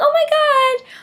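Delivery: very high-pitched, excited fangirl squeal.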